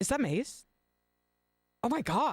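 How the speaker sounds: high, stunned, shocked exclamation. Retelling a waiter's reaction to a rare book: imitating someone in total shock. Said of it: "in total shock that Oscar was sitting there reading Maze".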